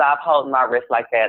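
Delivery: normal talking voice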